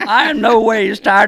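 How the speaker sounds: faked country voice, politician style. Repeating a quote after being told the voice sounds like Hillary Clinton. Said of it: "You sound like Hillary Clinton going".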